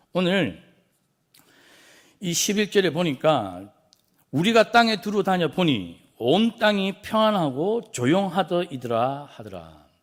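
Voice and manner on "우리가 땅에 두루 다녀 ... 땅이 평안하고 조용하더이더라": high, loud, ironic and sarcastic. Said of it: "이 어떤 뉘앙스인 것 같습니까? 일종의 반어법입니다".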